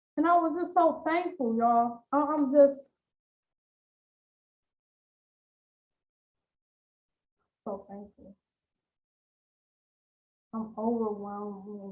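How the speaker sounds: fighting off tears, deeply thankful and overwhelmed. Sharing a testimony with listeners, holding back tears. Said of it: "I'm trying not to cry".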